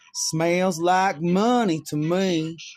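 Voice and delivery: put-on very slow, drawn-out Oklahoma accent. Retelling what a woman said about the smell: imitating an Oklahoma accent. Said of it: "with the Oklahoma accent".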